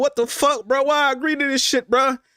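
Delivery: high, sobbing, tearful crying outburst. Retelling leaving the house after seeing mom: reenacting own crying outburst. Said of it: "I'm crying".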